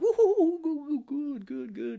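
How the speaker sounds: very high, loud, weird creepy cackle. Retelling the riddle-asker's words to Batman: imitating weird creepy laughs. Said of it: "he's doing these weird laughs".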